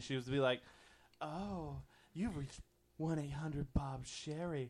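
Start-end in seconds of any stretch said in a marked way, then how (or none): 1.2-4.7 put-on sultry, sexy phone voice, much slower. Speaker retells calling a phone line at work, imitating a sexy phone voice. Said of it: "listen to the sexy voice of the lady".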